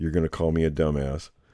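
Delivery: speaking low. Retelling what a man said when he called, in a low voice. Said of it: "he'd kind of be in a low voice".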